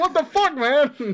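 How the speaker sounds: loud, high-pitched angry shout.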